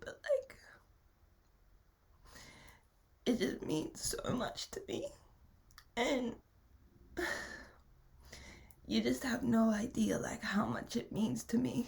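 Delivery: talking while crying, tearful, weeping voice. Thanking everyone who donated to your GoFundMe, crying. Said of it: "Sorry, I'm crying".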